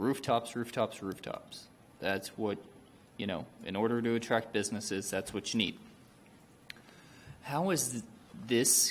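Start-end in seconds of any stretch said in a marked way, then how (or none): none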